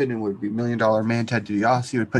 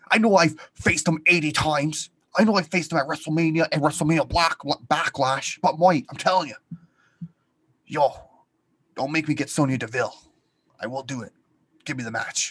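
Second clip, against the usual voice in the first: put-on Scottish wrestler voice, pitched higher; 5 semitones higher than usual. Acting out a wrestler asking to be booked: imitating Drew McIntyre's voice. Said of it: "You have to do the voice".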